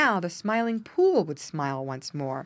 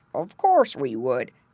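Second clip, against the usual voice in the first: rough, loud growling voice; 6 semitones lower, 5 dB louder than usual. Reading a story aloud, voicing Grandfather Frog's reply: gruff Grandfather Frog voice. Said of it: "said a gruff voice".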